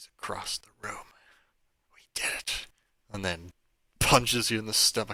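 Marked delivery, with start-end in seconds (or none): 0.0-2.7 soft, close-in whisper as if into the ear. A man takes you by the shoulder and leans in: whispering into ear. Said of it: "whispers into your ear".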